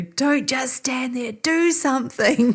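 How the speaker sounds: urgent, slow, drawn-out shout. Retelling what an injured man on the ground shouted: imitating someone shouting. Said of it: "he shouts at me".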